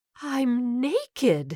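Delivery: trembling, wavering, quivering high-pitched voice. Narrator reads a woman waking under bright lights, voice quivering. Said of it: "her voice quivering".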